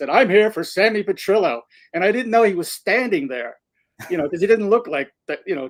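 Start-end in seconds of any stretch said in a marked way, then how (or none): 0.1-1.6 acted-out booming, carrying, loud announcing voice. Retelling standing in the admission line with Mark, saying it in a big voice. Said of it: "like in a you know in a big voice".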